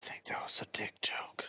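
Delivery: hushed whisper under the breath. Speaking in character, leaning over to another character: whispering. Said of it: "I whisper over to him".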